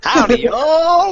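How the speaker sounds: put-on Texas accent, very high and loud. After another speaker asks for it, someone tries out a Texas accent. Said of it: "give him your, your Texas accent".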